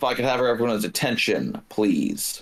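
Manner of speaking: voice thrown across the room. Speaking in character during a role-play scene: raised voice. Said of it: "raise my voice".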